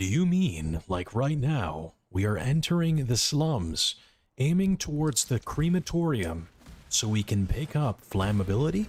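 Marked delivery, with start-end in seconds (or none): 1.1-8.9 narrator voiceover voice. Answering praise of the voice by showing it: voiceover voice. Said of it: "I love your voiceover voice with this microphone".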